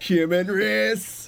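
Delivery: slow, high, loud, drawn-out mocking drawl.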